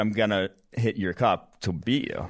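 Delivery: plain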